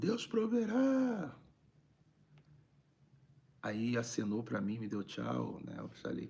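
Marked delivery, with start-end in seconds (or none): 0.0-1.3 acted-out very high shouted call. Retelling how a man on the street called out: imitating a man shouting. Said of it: "o cara gritou assim".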